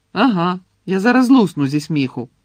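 loud, biting, sarcastic snap. Replying to someone's cheerful remark about Fred and George, snapping back. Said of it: "огризнулася Герміона".

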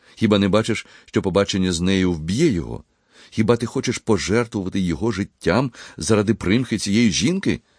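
ordinary delivery, nothing marked

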